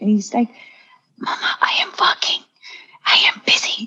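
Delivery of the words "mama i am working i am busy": put-on slow, hushed whisper in a little child's voice. Retelling a small child's pretend play at bed: imitating a child whispering. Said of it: "he starts whispering".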